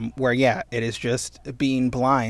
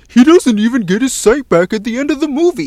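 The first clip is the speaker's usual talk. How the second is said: put-on high-pitched, loud, whining voice. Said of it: "Doug was like".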